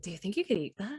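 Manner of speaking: hushed, soft, quiet voice. Speaking in character to Nell so others won't hear: talking quietly. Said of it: "I'm gonna try to talk quietly so nobody else can really hear".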